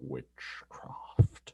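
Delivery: low, quiet, whispered voice. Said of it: "even then, it's very quiet".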